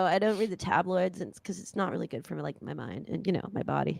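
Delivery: soft mumbled mutter, half to himself. Retelling how a man talks, imitating him muttering under his breath. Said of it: "he does a lot of stuff under his breath".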